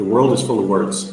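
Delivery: easy, fast, natural-sounding native delivery. Showing how a native would say the sentence, fast, natural native speech. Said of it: "If I said it fast".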